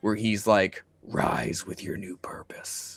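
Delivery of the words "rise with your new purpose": hushed, breathy, whispered demon voice. Pitching a trailer voiceover, the speaker voices the demon: demon voice. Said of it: "the voice of this demon".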